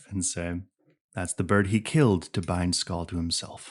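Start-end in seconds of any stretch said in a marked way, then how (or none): 1.1-3.7 low, close, confiding conspiratorial delivery. Voicing a character confiding something to a player: low, close, conspiratorial voice. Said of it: "He's gonna say this low and close and conspiratorial".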